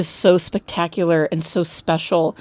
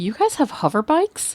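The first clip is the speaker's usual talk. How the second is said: put-on jealous voice, higher; 5 semitones higher, 4 dB quieter than usual. Retelling a favorite movie line, imitating Everett Ross sounding jealous. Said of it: "In this sort of, like, jealous".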